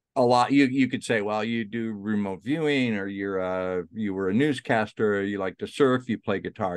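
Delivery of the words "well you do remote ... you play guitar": ordinary delivery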